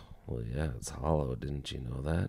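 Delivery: soft, offhand, throwaway mumble. Retelling what a companion said under his breath: imitating Jack's quiet mumble. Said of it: "Jack very quietly mumbled".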